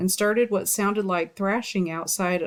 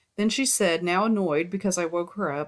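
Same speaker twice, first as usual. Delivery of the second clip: ordinary delivery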